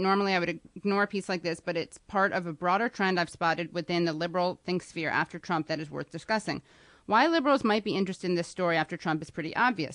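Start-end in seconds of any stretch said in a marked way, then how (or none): none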